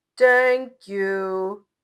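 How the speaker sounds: deep, booming monster voice, pitched very low. Narrator voices the giant's first spoken word, in a deep, booming voice. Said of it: "in a deep, booming voice".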